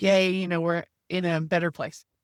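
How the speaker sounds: ordinary talk, nothing marked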